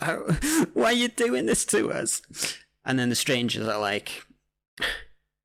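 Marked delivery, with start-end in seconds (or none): 0.0-2.2 terrified, high-pitched voice breaking into laughter. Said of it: "and the victims are like".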